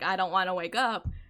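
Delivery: half-asleep, groggy groaning voice. Retelling being half awake on a call: imitating own groggy groan.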